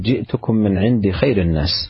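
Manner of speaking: plain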